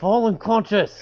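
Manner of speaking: whispered speech. Speaking in character while holding someone down, whispering. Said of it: "I'm just kinda whispering into your".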